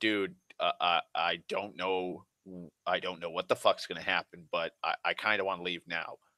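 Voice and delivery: put-on uneasy, anxious, very worried, fretful tone. Retelling how a man urged Oscar to leave, in a very worried tone. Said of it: "a very worried tone".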